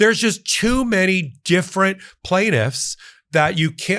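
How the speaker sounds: high, whiny put-on voice. Mimicking a man's biggest legal argument: mock whining voice. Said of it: "I don't know why I'm doing this whining voice for him".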